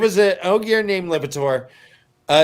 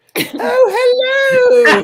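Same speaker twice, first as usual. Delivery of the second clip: put-on British female voice, much higher, louder; 7 dB louder than usual. Showing co-hosts the only female voice they can do: Mrs. Doubtfire voice. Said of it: "I can only do a female voice with a British accent".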